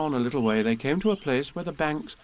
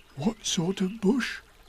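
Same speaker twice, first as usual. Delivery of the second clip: high, confiding aside voice; 5 semitones higher than usual. Narrator reads Pooh asking Piglet privately; half-whispered. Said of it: "whispered Pooh to Piglet".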